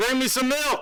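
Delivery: high-pitched, loud yelling. Acting out a rehearsal line, imitating someone yelling. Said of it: "He's yelling".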